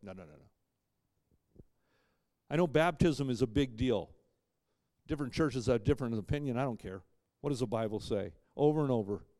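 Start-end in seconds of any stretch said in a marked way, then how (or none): 0.0-1.6 very soft, slow, bashful voice. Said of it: "To not be so bashful that we go".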